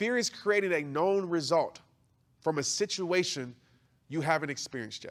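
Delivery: halting, broken-up delivery with pauses inside phrases. Teaching a definition, the speaker repeats it for listeners to write down, said slowly. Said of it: "I'm going to say it slow".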